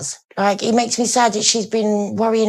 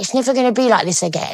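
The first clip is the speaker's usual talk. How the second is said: ordinary talk, nothing marked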